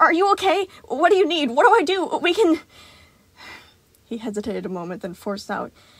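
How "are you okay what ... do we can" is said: high, frantic, mounting panic. [name] questions Gregory, who says he is fine standing there, panicked. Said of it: "growing more panicked by the second".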